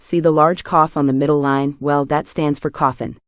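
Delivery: ordinary delivery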